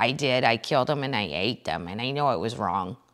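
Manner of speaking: put-on soft, low murmur in a mild Wisconsin accent. Show how unthreatening a serial killer sounded in an interview, as a Jeffrey Dahmer impression, Wisconsin accent. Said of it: "when you say it with the Wisconsin accent".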